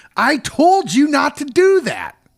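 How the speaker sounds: mock upset, very high, shrieking scream. Recounting the story, acting out Victor screaming at Kenny: mock scream at Kenny. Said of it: "He's screaming at Kenny".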